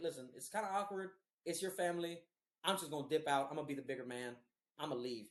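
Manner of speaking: ordinary delivery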